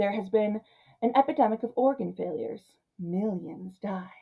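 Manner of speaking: over-the-top, hushed, dramatic comic-book style narration. Reading a film's comic-book opening line for line, in dramatic comic-book narration. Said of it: "You can hear I'm doing it".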